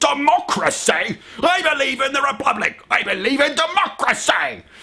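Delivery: dramatic, grand, very high-pitched declaiming tone. Speaker going off on a geek tangent, dramatic Obi-Wan impression. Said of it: "I sound like Obi-Wan".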